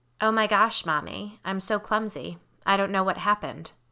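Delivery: flat, emotionless, deadpan voice. Reading a story where a daughter fakes an apology: flat, emotionless voice. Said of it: "It was flat, lacking any emotion".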